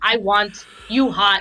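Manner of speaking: put-on caveman talk voice. Mocking a clumsy personal ad by rephrasing it: caveman talk voice. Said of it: "this is caveman talk".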